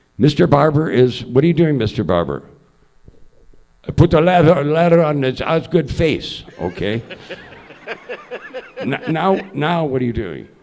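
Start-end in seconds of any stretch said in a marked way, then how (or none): 3.9-7.0 heavy, thick put-on Russian accent. Doing the barber in a play-by-play bit, with a thick russian accent. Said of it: "the thick Russian accent".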